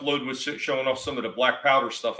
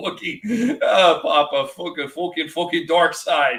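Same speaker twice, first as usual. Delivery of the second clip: northern English accent, loud and high; 5 semitones higher, 5 dB louder than usual. Laughing at the idea, the speaker imagines Darth Vader with a northern accent. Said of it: "I imagine Vader talking with a northern accent".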